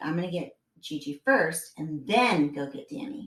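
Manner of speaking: ordinary delivery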